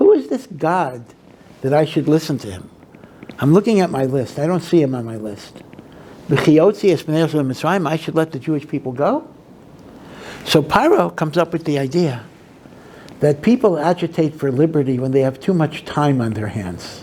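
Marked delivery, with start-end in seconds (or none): none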